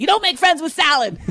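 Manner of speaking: high yelling with wide pitch swings.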